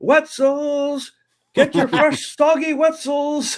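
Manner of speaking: shrill, very high, drawn-out street-vendor cry. Retelling the pretzel seller's call on a rainy day: imitating a pretzel vendor's call. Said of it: "he's going".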